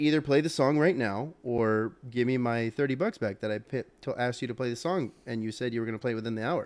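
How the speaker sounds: ordinary talk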